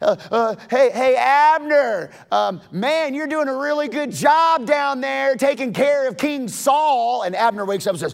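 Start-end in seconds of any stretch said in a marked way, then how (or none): 0.0-7.2 mocking, pitched-up jeering taunt, one word drawn out. Retelling how David taunted Abner from the mountain: imitating a taunt. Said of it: "he taunts Abner".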